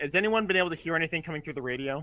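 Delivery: ordinary delivery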